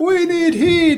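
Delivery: put-on very high shout in a heavy Jamaican accent. Retelling a scene, quoting the stereotypical jamaican guy yelling in a heavy jamaican accent. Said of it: "yelling all this stuff with a heavy accent".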